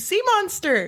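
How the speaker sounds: put-on high-pitched, overwhelmed child's scream. Retelling a scene in which a kid screams: retelling a scream. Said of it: "just screams".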